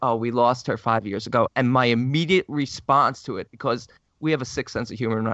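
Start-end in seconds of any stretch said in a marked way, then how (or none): none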